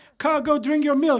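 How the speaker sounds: loud, high mocking taunt. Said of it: "we made fun of him".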